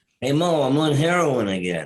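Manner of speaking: put-on high, old-time slapstick comic voice. Joking about a Three Stooges character: Larry Fine impression. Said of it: "Larry Fine impression that I did".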